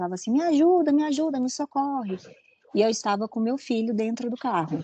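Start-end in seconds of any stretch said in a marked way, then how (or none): 0.3-2.2 put-on, high, shrieked, desperate begging scream. Recounting a woman getting out of a car, retelling her screaming for help. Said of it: "ela já saiu gritando muito".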